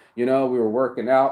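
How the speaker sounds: plain reading voice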